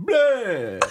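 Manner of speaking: high vampire voice with bleh drawn out. Ending a comedy podcast's welcome in a Dracula voice. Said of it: "Thanks, Dracula".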